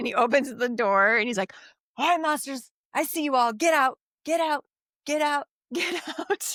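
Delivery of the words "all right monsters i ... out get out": high, eager, enthusiastic yell. Retelling a movie scene where a dad orders monsters out: imitating an enthusiastic shout. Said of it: "which I appreciate your enthusiasm".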